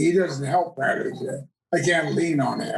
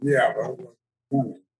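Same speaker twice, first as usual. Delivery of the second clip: put-on mumbling voice; 4 semitones lower than usual. Retelling own reply after an audition reading: imitating own mumble. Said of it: "And I mumbled".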